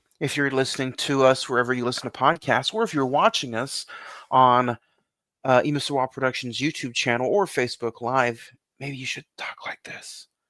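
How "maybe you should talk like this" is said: soft ASMR whisper, much quieter. Podcast host addresses the listeners in an ASMR whisper. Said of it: "it's like A S M R silent".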